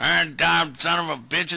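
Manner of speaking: put-on grumbling voice of a hundred-year-old man. Picturing himself on the porch as a hundred-year-old: acting a hundred-year-old on the porch. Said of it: "a hundred years old going".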